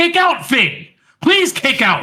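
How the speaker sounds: very high, shrill, all-out fan yell. Retelling watching a match with his daughter: imitating his own yell. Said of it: "I literally verbally yelled out".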